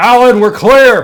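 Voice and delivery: very loud, high-pitched calling out. Playing a role in a group scene, calling out again to someone. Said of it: "I'm gonna call out again".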